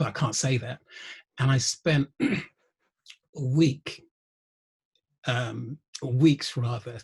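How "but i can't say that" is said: plain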